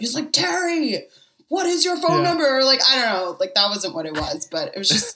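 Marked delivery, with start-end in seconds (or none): 0.3-2.5 shrill, very high, overacted, over-the-top yelling. Retelling a movie scene where a character yells: imitating a character yelling. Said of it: "the other guy starts yelling at him".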